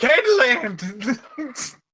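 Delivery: high-pitched shout, drawn out long.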